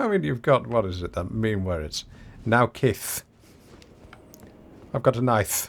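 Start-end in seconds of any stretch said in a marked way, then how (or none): 2.4-5.7 imitated, put-on lisping speech. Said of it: "When you say nice with a lisp".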